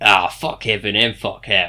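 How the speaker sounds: put-on Cockney accent drifting toward Australian. Voicing a character's line, meant as Cockney: Cockney accent slipping into Aussie. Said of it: "she went more Aussie than Cockney there".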